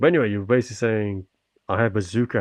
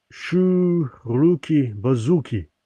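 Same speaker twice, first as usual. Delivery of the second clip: put-on Russian accent with drawn-out Shu; 4 semitones higher than usual. Trying to pronounce a foreign phrase, in a put-on Russian accent. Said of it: "why I'm putting on a Russian accent while speaking like this".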